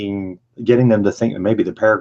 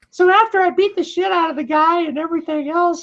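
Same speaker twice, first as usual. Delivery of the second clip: put-on, very high, squeaky, puppet-like voice. Practicing voices with another speaker, doing a Muppet-like Mike Tyson impression. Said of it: "He sounds like a Muppet".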